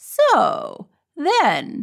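suspicious true-crime narrator. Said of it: "'cause he'll be like".

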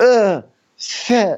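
put-on shrill, high-pitched, grossed-out disgusted outburst. Retelling how a man reacted after tapping his glass, imitating disgust. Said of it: "he's like disgusted by it".

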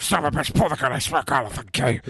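fast, rattled-off put-on tough-guy voice. Telling about being stopped by an officer, showing the voice not used: Batman voice. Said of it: "I was gonna use my Batman".

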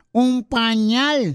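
put-on granny voice, little old lady. Telling a joke, a granny answers the man on the phone, little old lady voice. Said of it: "con voz de viejita".

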